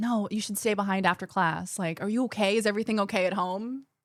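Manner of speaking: hushed, very quiet, grave, solemn, concerned murmur. Retelling what she said about staying after class: imitating someone speaking very quietly and solemnly. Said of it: "very, very quietly, very solemnly is like".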